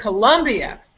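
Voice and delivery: Colombia stressed as the focus word. Explaining sentence focus to lauren, demonstrating stress on colombia. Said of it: "also say it this way".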